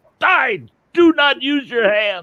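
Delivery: very high, shrill, drawn-out holler rising upward. Retelling a buddy yelling up from the fire pole: imitating someone yelling. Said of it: "and he yells up at me".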